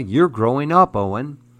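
ordinary delivery

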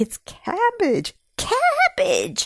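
very high-pitched, swooping, cheering exclamation. Seeing cabbages in the once-dry garden patch, the narrator lets out a loud hurrah. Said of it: "I let out a loud hurrah".

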